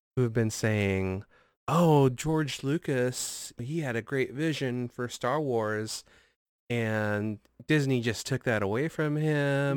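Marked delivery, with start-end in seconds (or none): none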